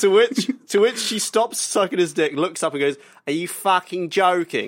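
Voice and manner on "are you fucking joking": put-on strong Cockney accent, higher. Retelling what a woman said in a video, in a very Cockney accent. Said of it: "In the very Cockney accent".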